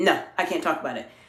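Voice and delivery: low, quiet, evasive, brushing-off dismissive tone. Showing how an answer to an interviewer can sound, in a low dismissive tone. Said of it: "my tone of voice is a look a bit lower. It's, it sounds very dismissive".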